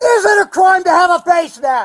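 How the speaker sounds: furious, angry, very loud, high shouting. Stopped and told "we're investigating," confronting the questioner: angry yelling. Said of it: "Why are you".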